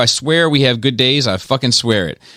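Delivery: normal talking voice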